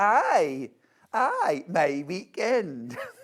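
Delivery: very slow, attempted put-on Geordie accent. Answering a viewer's comment in a Geordie accent: put-on Geordie accent. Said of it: "I done an accent".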